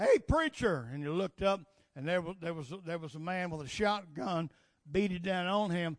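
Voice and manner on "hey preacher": put-on holler, higher and louder. Telling a story, voicing the man on the bridge calling to the preacher, retold hollering shout. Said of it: "He hollered".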